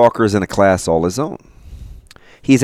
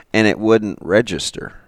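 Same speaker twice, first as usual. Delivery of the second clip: ordinary delivery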